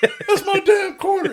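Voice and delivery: freak-out shriek, very high, very loud, shrill. Joining a retelling of a man who finds his quarter taken, imitating a freak-out. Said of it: "all of a sudden he freaks out".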